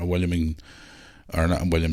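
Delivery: ordinary delivery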